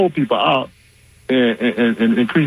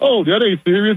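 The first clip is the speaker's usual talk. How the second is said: mock laughing while talking, higher; 8 semitones higher than usual. Retelling how someone laughed it off: imitating someone laughing while talking. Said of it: "he was just laughing like".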